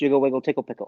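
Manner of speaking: very fast, rapid-fire delivery. Trying a tongue twister from a book again, said real fast. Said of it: "Say it real fast".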